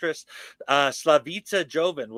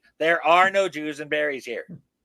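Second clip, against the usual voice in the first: ordinary delivery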